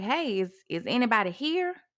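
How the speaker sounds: plain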